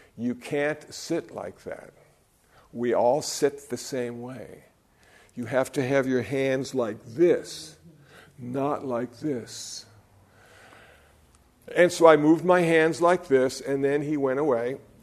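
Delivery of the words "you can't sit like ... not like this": put-on whisper, quieter. Retelling what the head Zendo guy said mid-meditation: imitating a whisper. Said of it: "whispers in my ear halfway through the meditation".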